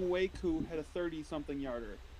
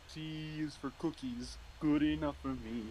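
put-on furry puppet monster voice. Asked for their best impression before the cookies segment: Cookie Monster impersonation. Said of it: "your best Cookie Monster impersonation".

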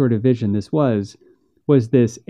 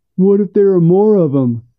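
high, mocking parody voice; 7 semitones higher, 4 dB louder than usual. Reading a story, the narrator voices a boy in a mocking imitation of his brother. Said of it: "Bo mocked his brother with expert skill".

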